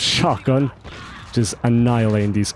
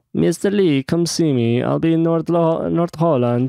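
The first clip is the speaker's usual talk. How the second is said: worst possible put-on Italian accent; 6 semitones higher than usual. Reading an email from Rudy aloud: worst Italian accent. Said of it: "That's the worst Italian".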